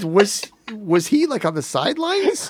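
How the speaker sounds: very high, baffled, confused chatter.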